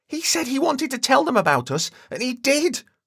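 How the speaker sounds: shrieked, very high screamed voice. Narrating a story, voicing Justin's outburst in front of Jennifer, screaming. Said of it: "Justin screamed".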